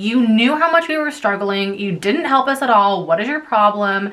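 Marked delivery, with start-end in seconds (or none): none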